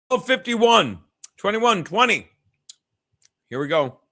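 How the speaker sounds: speaking with food in mouth. Calling football play-by-play, talking while chewing. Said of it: "but I'm still chewing".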